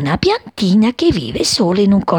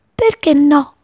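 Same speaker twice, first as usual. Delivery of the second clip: high, laughing, exclaimed through laughter; 7 semitones higher, 4 dB louder than usual. Reading a story aloud, the little sparrow answers, exclaimed laughing. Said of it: "esclamò ridendo".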